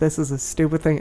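ordinary talk

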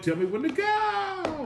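very high, unhinged crazy voice, slow and drawn out. Retelling adding a line after the hook: imitating own crazy voice. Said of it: "I added my little crazy ass voice".

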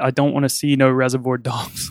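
imitated mocking tone. Retelling a customer's reply to a film suggestion: imitating a mocking customer. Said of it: "the customer mockingly replied".

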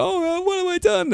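very high, sobbing, remorseful crying voice. Retelling how a killer reacted after his crimes, imitating someone crying. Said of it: "so from crying to".

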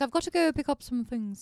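put-on accent drifting toward Irish. Quoting a film character's line: imitating Emma Watson's Irish-sounding accent. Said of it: "She sounded Irish".

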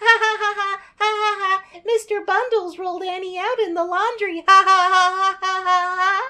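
put-on very high, loud kids' giggling through words. Retelling a scene where orphan kids giggle about Annie: imitating kids giggling. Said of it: "the kids are all giggling".

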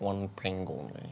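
suave, smooth, low, hushed, barely audible delivery. Showing a co-host how to do it: Sean Connery impression. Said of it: "that's very close".

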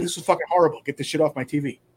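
ordinary talk

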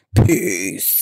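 voice dropped as deep and low as possible. A podcast host signs off to listeners in the deepest Pam voice. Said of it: "in my deepest Pam voice".

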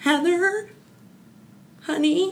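very high, wobbling, quavering tearful crying voice. Retelling her mom yelling down the stairs to her, imitating a quavering crying voice. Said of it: "had this quavering, like cryy voice".

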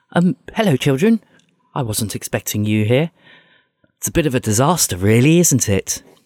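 prim museum curator voice. Voicing a character greeting the children in full-on curator mode. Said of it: "in full-on curator of the museum mode".

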